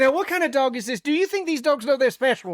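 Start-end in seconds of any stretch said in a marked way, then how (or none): 1.0-2.6 put-on British accent, pitched up. Doing the voice for the other guy, in a British voice. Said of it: "I'm doing the British voice".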